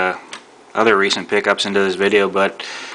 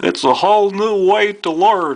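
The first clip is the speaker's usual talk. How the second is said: bad put-on voice, very high and squeaky; 12 semitones higher than usual. Reading a slogan printed beside a celebrity: terrible Bill Cosby impression. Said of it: "that was a terrible Bill Cosby impression".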